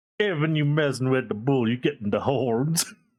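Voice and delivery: put-on British Texan accent. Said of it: "it's a very weird accent".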